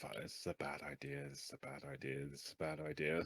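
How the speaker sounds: quiet muttering under breath. Voicing a character paddling out in a raft: muttering under his breath. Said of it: "Just under his breath".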